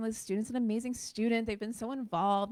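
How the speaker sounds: usual speaking voice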